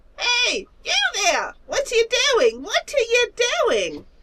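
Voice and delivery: very high, playful, impish little creature voice. Voicing a small winged creature peeking from behind rocks: mischievous little creature voice. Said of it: "a very mischievous smile. And it pokes up from behind some rocks, and it says".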